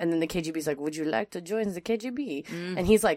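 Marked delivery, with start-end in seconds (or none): 0.8-2.5 put-on speaking with a French accent. Retelling a spy story, the speaker voices the KGB in a French accent. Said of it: "That was very French KGB accent".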